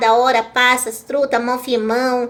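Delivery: plain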